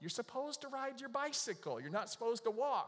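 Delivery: high, mild scolding tone, calling out. Retelling what people shouted as they walked over the bridge, imitating people yelling. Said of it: "people are yelling at us".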